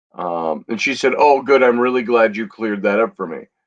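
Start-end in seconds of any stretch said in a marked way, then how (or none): 1.2-3.4 put-on thick sarcasm, faster. Recounting a woman's answer in a message exchange, retelling a sarcastic remark. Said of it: "thick with sarcasm going on here".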